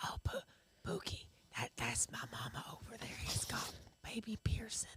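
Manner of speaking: soft, hushed, barely voiced little whisper. Retelling what a child said at the doctor's office: imitating Harry whispering. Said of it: "He was whispering at the".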